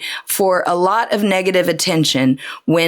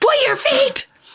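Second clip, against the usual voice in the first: put-on yelling, higher. Retelling being yelled at by a dance teacher to point feet: imitating the dance teacher yelling. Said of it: "being yelled at to point our feet".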